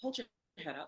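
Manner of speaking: soft, barely audible half-whisper, close up. Retelling what an elder said in the speaker's ear: imitating a quiet half-whisper. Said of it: "She whispers in my ear quietly".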